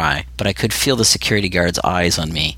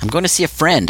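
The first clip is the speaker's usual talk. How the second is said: barked, abrupt and rough, sharp, pitched up; 9 semitones higher than usual. Narrator answering a man who asked his business on the upper floors, barked. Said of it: "I barked at him".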